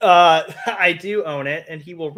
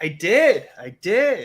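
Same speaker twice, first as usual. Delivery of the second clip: imitated surprised tone, mock surprise. Imitating how the other person sounded answering a question: mock-surprised. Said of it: "you're just like".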